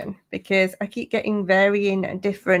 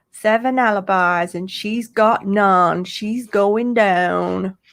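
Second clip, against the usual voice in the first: slight put-on American accent, slower. Speaker greeting Steve and Dawn, doing a little American accent. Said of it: "Did you like my little American accent then?".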